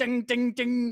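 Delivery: mock, high ringing ding ding ding.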